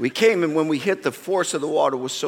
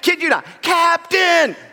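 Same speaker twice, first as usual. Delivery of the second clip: play-acted shrill, loud shout as if from afar; 14 semitones higher, 5 dB louder than usual. Stranded in the water, recalling a guide yelling to them: retelling a yell. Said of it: "this echoing voice yelling".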